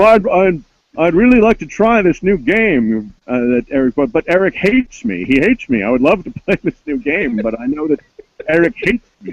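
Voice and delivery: very high pitched, stuttering, stammering voice. Retelling what an annoying gamer said: stuttering Mister Howell voice. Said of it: "talks kind of like a stuttering Mister Howell".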